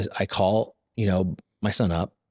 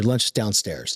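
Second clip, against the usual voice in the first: normal talking voice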